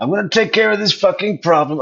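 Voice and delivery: quick, hot, angry delivery. She does an impression of an angry man, Sigfredo Garcia impression. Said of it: "She's doing an impression of him".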